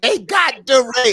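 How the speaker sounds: mock high-pitched shrieking scream. Retelling how a buddy at a rally reacted: imitating someone screaming. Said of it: "starts screaming".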